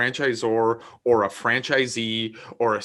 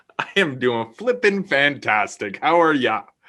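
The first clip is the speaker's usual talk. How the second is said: jokey, fake, put-on Canadian accent; 2 semitones higher, 4 dB louder than usual. Greeting the other speaker in a joking way: put-on Canadian accent. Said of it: "Is that a Canadian accent?".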